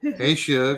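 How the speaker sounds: put-on Texas woman's accent. Imitating how a Texas woman greets you, in a Texas woman accent. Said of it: "a Texas woman that says that calls you Suge".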